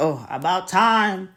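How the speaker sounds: mock sarcastic grudging tone. Imitating enemies who grudgingly celebrate you: mock sarcastic remark. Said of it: "They're gonna be saying in a sarcastic way".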